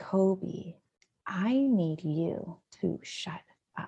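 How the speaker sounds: soft, very drawn-out whisper. Retelling how a child spoke to a stuffed animal: imitating a whisper. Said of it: "he then whispers to a stuffed animal".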